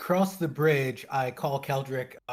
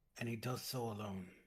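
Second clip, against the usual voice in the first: muttering quietly under the breath, quieter; 3 semitones lower, 15 dB quieter than usual. Voicing a character telling the others at a river: speaking under his breath. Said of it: "under my breath, just so that they can hear me".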